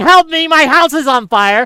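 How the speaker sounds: acted-out screaming. Describing a man whose house is on fire, retelling his scream for help. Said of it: "He's screaming".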